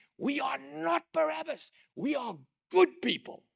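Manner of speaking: put-on very high, shrieking, shouted Italian accent. Speaker retelling a woman in the auditorium shouting at him, Italian accent. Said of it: "She screams out in an Italian accent".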